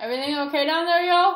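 high-pitched, loud calling out.

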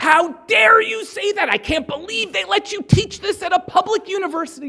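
furious, very high-pitched, lid-blowing outburst. Retelling a man's reaction to hearing the justice system called racist, imitating someone going apeshit. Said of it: "He goes totally apeshit".

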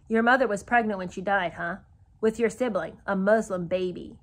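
ordinary delivery

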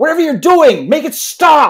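very high, shrill, furious in-your-face screaming. Voicing a burly man looming over someone: screaming in his face. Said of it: "screaming in his face".

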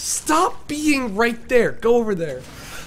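high, slow, drawn-out yell.

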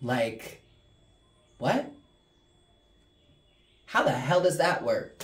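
exasperated, frustrated, annoyed outburst of disbelief. During a tarot reading, reshuffling the deck for a closing message: frustrated, annoyed. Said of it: "I'm sure you can hear the frustration".

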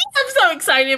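mock, very high, hyped-up, over-the-moon gushing. Retelling how a character acted on the outside: imitating Ruby, hyped and excited. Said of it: "Ruby was high and like".

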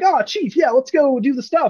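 very high, perky, upbeat and peppy. Describing the Weapon talking to Chief, imitating Weapon, perky and upbeat. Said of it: "she's like very perky and upbeat".

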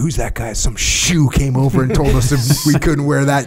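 high, contemptuous, derogatory, dismissive tone. Retelling how team members talk about a shoe: imitating derogatory tone. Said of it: "the derogatory".

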